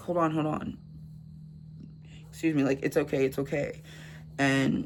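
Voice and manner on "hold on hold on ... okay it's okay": ordinary talk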